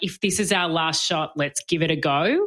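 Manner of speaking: ordinary talk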